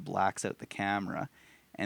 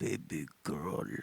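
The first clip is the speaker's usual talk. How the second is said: put-on creepy creature voice, lower and quieter; 5 semitones lower, 7 dB quieter than usual. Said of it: "He does the coolest voice ever".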